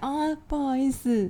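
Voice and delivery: humble, meek, submissive, soft and drawn out. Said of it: "再拍谁一点的语气".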